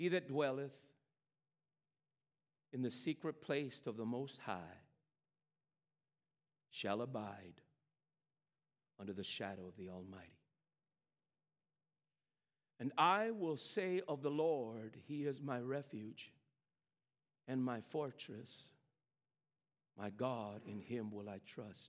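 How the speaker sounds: very slow, measured, deliberate, word by word. Sharing the word of the lord with listeners: very slow and deliberate. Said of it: "I'm going to do it very slow and very deliberate".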